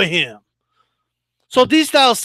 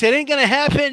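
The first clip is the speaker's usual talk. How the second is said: sure, settled, confident certainty. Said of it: "I know you hear the confidence in my voice".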